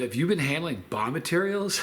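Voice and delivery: ordinary talk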